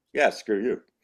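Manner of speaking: smug, cocky, arrogant tone. Retelling how everybody else delivered the line: imitating a cocky, arrogant delivery. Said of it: "it just sounded cocky and arrogant".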